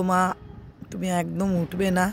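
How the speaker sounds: usual speaking voice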